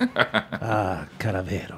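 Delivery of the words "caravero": reverent prayer-like tone, lower and quieter. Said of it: "It's like a prayer".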